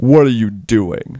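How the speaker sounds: slow, stern, severe, disapproving tone. Voicing a man who finds a player at his door: stern. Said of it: "he looks at you sternly".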